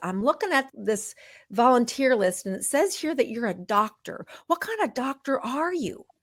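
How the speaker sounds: put-on Southern accent. Speaker quoting a woman at the clinic, in a thick southern accent. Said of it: "this thick Southern accent says".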